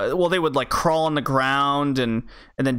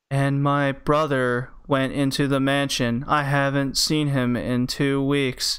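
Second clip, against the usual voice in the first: mock flat, bland monotone, slower. Mocking bland voice acting, quoting a line in a flat monotone. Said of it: "I thought they were just computer-made voices".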